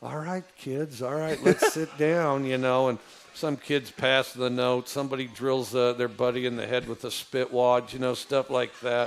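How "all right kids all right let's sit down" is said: easygoing, relaxed, mellow speaking voice. Retelling talking to elementary school kids: imitating own nice mellow voice. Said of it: "I could do the nice mellow voice".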